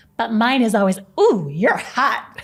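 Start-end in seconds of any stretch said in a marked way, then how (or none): 1.2-2.4 sarcastic, ironic, mocking tone. Acting out what is said to the mirror each morning: imitating sarcastic self-compliment. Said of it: "Total sarcasm".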